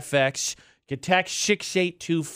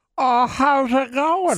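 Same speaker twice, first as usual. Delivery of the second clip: put-on old man voice, raised and higher; 9 semitones higher, 5 dB louder than usual. Speaker breaks into a conversation with a greeting, old man impression. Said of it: "That's my old man impression".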